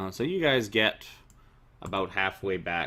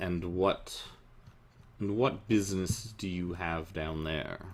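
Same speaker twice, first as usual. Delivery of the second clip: put-on much older sinister voice, quieter; 2 semitones lower, 4 dB quieter than usual. A figure questions the three of them heading down, much older, sinister voice. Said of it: "much more sinister voice ask you".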